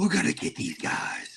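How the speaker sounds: slow, breathy, hushed superhero whisper. Discussing an actor's movie role, quoting him in Batman voice. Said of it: "You say Batman voice".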